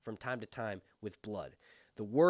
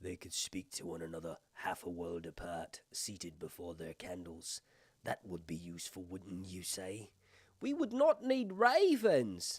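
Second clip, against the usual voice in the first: put-on, low, swooping British accent; 6 semitones lower, 3 dB quieter than usual. Rereading a passage George sent his editors, trying it better: British accent. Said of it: "I'll do a British accent".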